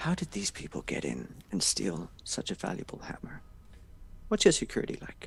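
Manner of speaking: whispered voice. Voicing a character leaning close to another, whispering in Dwarven. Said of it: "whispers in, in Dwarven".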